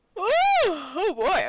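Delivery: very loud, talking through a big yawn. Chatting with a friend of 27 years after waking early, yawning while talking. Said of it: "a yawn just overtook me".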